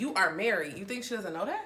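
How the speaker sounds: ordinary talk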